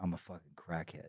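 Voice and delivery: put-on tearful crying. Retelling confessing to the band, acting out the tearful confession. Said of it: "I start crying".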